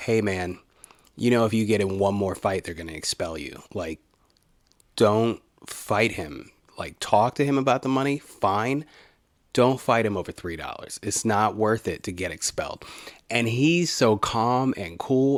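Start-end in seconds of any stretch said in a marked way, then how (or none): none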